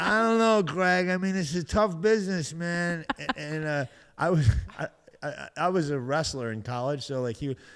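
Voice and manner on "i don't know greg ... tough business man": put-on Italian accent, pitch rising and loud. Retelling what a comedy club owner said on the phone: imitating Freddie, an Italian guy. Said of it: "He's this Italian guy".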